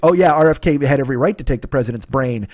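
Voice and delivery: ordinary talk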